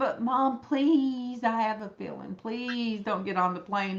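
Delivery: mock, put-on begging, pleading voice. Mother retelling her son pleading with her before her flight, imitating son begging. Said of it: "my son begging me".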